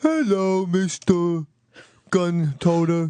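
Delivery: goofy, funny animated cartoon moose voice. A cartoon moose pops up mid-ad and gives a greeting, in a funny cartoon moose voice. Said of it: "a cartoon moose doing a funny voice".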